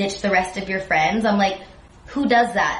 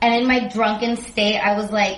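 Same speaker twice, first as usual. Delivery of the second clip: plain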